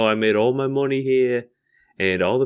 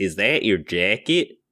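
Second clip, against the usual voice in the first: put-on Chicago accent, lower; 3 semitones lower than usual. Trying out a chicago accent for the others: chicago accent. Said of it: "as good of Chicago accent as we're going to get".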